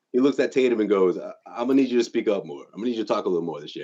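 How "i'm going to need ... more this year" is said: completely serious, earnest, dead serious, no laughing at all. Retelling Jason speaking to Tatum while Tatum laughs, imitating Jason, dead serious. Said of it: "he's just like dead serious".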